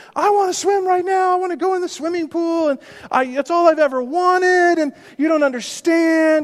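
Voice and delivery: mock very high sobbing, screaming child's crying wail. Retelling her outburst when told no: imitating a screaming cry. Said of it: "She just starts screaming, crying".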